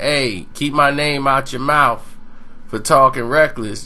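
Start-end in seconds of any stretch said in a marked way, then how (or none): none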